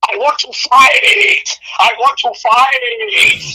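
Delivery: very slow, drawn-out, high, big dramatic delivery. Recalling a wrestling promo, quoting Rush in his very dramatic voice. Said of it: "in his very dramatic voice".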